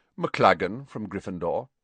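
ordinary delivery

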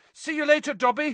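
high-pitched, loud, carrying shout. Harry calls back to dobby as he sprints off down the corridor, shouted. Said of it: "Harry shouted".

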